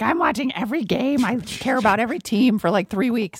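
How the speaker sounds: high, goofy, silly puppet character voice. Telling another speaker about following playoff season, in a silly Muppet voice. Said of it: "Where did that voice come from?".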